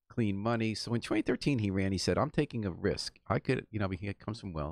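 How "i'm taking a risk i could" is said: usual speaking voice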